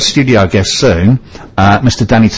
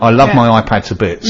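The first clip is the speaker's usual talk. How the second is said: plain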